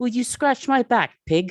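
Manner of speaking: put-on shrill, very loud, very high little-kid British accent. The speaker imitates a girl talking in her sleep, child's british accent. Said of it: "British accent".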